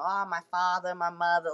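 put-on East Coast accent. Imitating how people in Maine talk: imitating a Maine accent. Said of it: "I will sometimes feel East Coast accent coming out".

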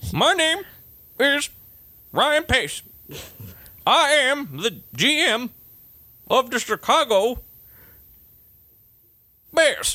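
put-on very high-pitched, grizzled old prospector voice. Mocking how the Chicago Bears GM talks, do Ryan Pace as old prospector mixed with Captain Kirk. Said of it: "like an old prospector missed with like Captain Kirk".

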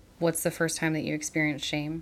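ordinary talk, nothing marked

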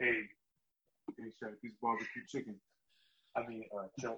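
deep voice, dropped way down. Taking a turn at a Shaq impression. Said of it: "can I do mine?".

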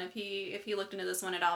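ordinary delivery

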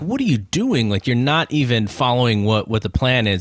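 ordinary talk

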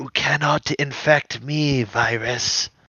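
weak, slow, high-pitched delivery. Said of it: "Fong kind of like weakly like mutters".

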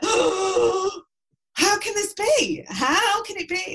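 very loud, very high, slow, drawn-out disbelieving scream. Retelling a man's reaction after he jumped from his chair: imitating someone screaming in shock. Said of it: "He started screaming".

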